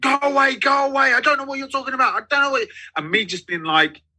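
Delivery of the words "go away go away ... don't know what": high, rushed, frantic put-on panic. Retelling standing at a man's door as he panicked: imitating a man panicking. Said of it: "him absolutely panicking".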